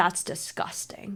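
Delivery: hushed, serious, disgusted scolding whisper. Retelling how someone scolded them for flirting: imitating a serious, disgusted rebuke. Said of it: "And they were so serious".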